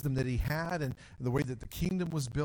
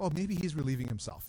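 scornful, teasing, mocking jab. Retelling how Elijah taunts the false prophets: imitating Elijah mocking. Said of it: "he begins to mock".

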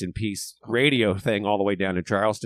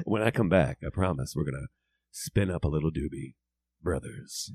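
put-on classic radio DJ voice, lower and quieter; 4 semitones lower, 5 dB quieter than usual. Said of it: "doing the classic radio".

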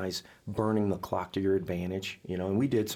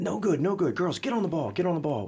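mock shouting, much higher and slower; 9 semitones higher, 4 dB louder than usual. Retelling a play messed up in practice, imitating Baker yelling. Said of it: "Baker's yelling".

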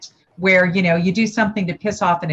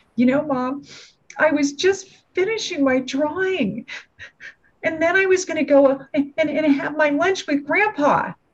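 put-on acted, choked, sobbing little girl voice, high and tearful; 8 semitones higher than usual. Retelling a young daughter's words to her mother: imitating a child choked with tears. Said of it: "choked between her tears".

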